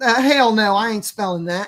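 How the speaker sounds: put-on Southern accent, loud and high. Retelling a young girl's reply to a spelling question: imitating a Southern accent. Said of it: "she was Southern".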